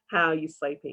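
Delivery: plain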